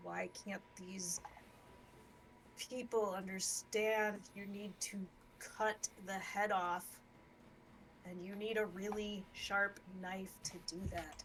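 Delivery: grumbled, muttered aside under the breath. Speaking in character to the Grand Tempest in a bar: under the breath. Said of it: "under my breath".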